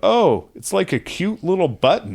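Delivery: real loud, high, swooping mocking tone. Retelling a woman on a dance floor turning on a man's advances; said really loud. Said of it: "says real loud".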